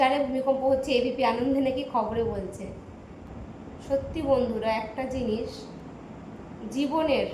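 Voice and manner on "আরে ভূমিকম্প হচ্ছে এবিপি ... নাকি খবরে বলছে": usual speaking voice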